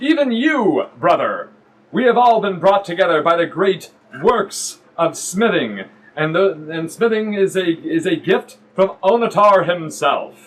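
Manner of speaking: booming boisterous sermonizing. Game master voicing a warforged pointing at the players: loud boisterous preaching. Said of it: "a loud boisterous voice, preaching the merits".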